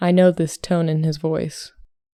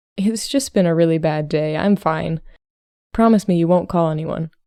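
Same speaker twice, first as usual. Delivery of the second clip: ordinary delivery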